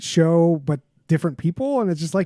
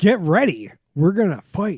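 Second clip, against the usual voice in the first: put-on, super serious, dead-serious announcer voice; 3 semitones higher than usual. Describing a fight announcer who was super serious: imitating a super serious announcer. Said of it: "the dude was super serious. He's like".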